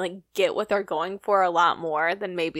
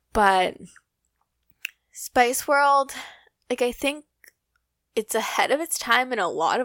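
fake choked-up, mock-emotional voice, higher in pitch; 5 semitones higher than usual. Talking about a favorite movie, jokingly choked up. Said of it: "I'm not getting choked up".

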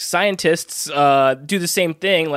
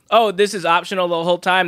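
usual speaking voice

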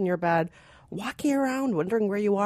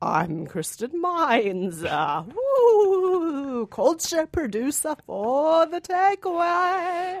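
mock spooky voice, pitched higher; 8 semitones higher than usual. Introducing herself again after being asked for her Halloween voice: put-on Halloween voice. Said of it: "What happened to your Halloween voice?".

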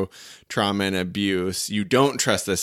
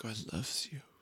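soft put-on Irish accent, much quieter; 2 semitones higher, 16 dB quieter than usual. Asked to do it again, the speaker says one line in Monica's Irish accent. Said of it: "I can only do it in a very soft voice".

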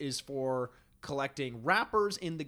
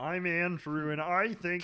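mocking puppet monster voice. Co-host mocks another co-host's opinion of a film: Grover-like mocking voice. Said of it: "I sound like Grover from Sesame Street?".

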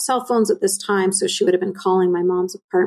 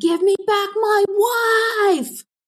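very high, slow shouting with wife drawn out; 14 semitones higher than usual. Retelling how a man came to the apartment: imitating someone yelling. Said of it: "He was yelling".

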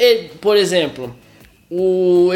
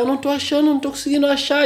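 mock high-pitched yelling in a raised voice; 8 semitones higher than usual. Retelling a film scene where she shouts she can't find them: imitating someone shouting. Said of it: "ela começa a gritar".

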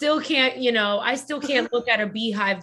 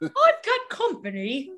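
poor put-on British accent, higher pitch; 10 semitones higher than usual. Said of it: "my British accent fucking sucks".

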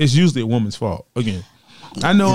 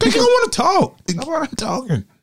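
very high-pitched voice; 11 semitones higher than usual. Arguing with someone who doesn't want to talk, high-pitched voice. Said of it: "you got all high pitch".

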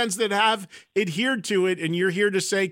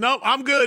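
put-on matter-of-fact tone, higher; 5 semitones higher than usual. Laughing and imitating how the guest sounds about stopping: imitating an unsentimental, done tone. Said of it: "I can hear it in your voice. You're like".

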